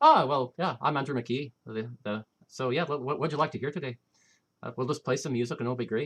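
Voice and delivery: loud, put-on stage Irish accent. Retelling how he talked in a persona at the fair: put-on irish accent. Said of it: "And I put on the Irish accent".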